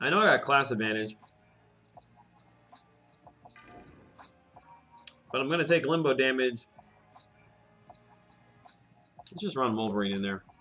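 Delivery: chewing close to the mic, mouth full. Commenting on your game move, you talk while chewing into the mic. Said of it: "I'm sorry for chewing in the mic".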